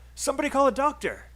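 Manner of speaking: frightened cry, very high-pitched and loud. Practicing a line for a situation where someone is scared: scared. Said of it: "This is probably a situation where someone is kind of scared".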